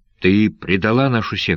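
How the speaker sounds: plain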